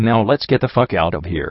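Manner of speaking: usual speaking voice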